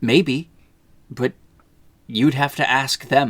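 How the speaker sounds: grave, very solemn tone. Retelling a film scene where he answers his wife: imitating a solemn reply. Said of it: "he just very solemnly looks at her and says".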